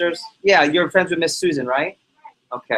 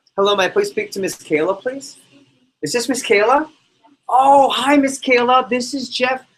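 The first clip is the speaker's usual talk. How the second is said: unthreatening, friendly voice, raised higher in pitch; 8 semitones higher than usual. Demonstrating a phone call to a customer, in a raised, friendlier voice. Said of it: "I raise my voice so I sound less intimidating, like the kid next door, and I speak in a lot friendlier tone".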